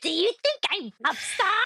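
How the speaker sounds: high, fast, mocking impression.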